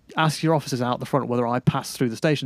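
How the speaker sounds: usual speaking voice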